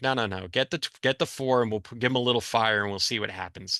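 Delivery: ordinary delivery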